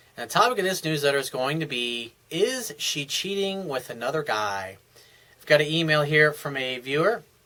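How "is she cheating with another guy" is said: ordinary talk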